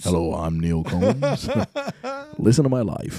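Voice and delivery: big, loud, swooping radio-host delivery. Talking about a man's life story, a speaker imitates Neil Combs's radio voice. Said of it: "that kind of radio voice".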